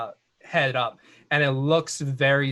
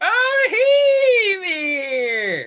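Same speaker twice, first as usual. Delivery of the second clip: put-on very high, loud, swooping old-timer voice; 8 dB louder than usual. Voicing the old guy with his pipe greeting the players: put-on old man voice. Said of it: "He's like".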